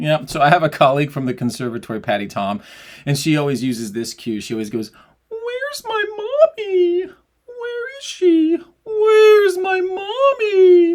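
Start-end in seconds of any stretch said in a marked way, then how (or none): 5.3-10.9 fake sob, very high, very slow, loud, drawn out. Speaker demonstrating a colleague's vocal cue for the sobby shape, mock sobbing. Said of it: "a really good way to feel that sobby shape".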